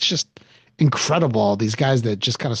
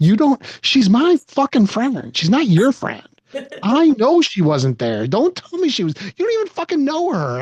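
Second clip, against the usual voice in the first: shrill, swooping, very high, loud furious yelling; 12 semitones higher, 5 dB louder than usual. Reenacting how he yelled at his wife while walking the dog: retelling screaming at his wife. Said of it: "and I'm screaming at my wife".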